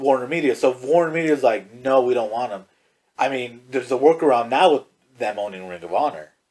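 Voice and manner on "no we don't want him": ordinary delivery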